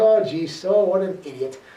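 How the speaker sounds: ordinary delivery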